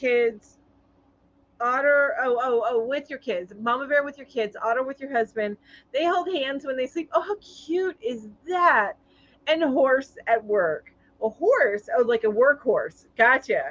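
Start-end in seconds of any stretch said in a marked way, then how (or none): none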